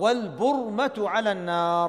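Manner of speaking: normal talking voice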